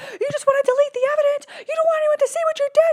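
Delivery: acted, very high, full-throated, top-of-the-lungs scream. Locked in a bedroom while someone bangs on the door, retelling yelling at top of lungs. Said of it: "I'm yelling at the top of my lungs".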